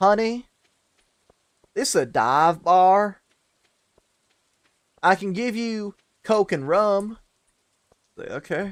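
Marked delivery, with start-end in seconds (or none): 0.0-7.2 put-on heavy Texas accent, very slow, drawn, raised, pitched up. Retelling what the lady at the dive bar told them, in a thick texas accent. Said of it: "thick ass Texas accent".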